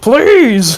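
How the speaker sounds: furious, angry single word, pitched high. Retelling a movie scene where a character angrily demands: imitating Samuel L. Jackson angrily. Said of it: "Sam Jackson angrily goes".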